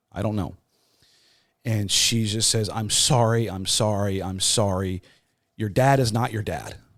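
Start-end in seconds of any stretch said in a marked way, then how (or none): 2.7-6.7 put-on tearful, uncontrollable crying. Retelling a phone call where the mother delivered the news: imitating someone crying uncontrollably. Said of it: "she was crying uncontrollably".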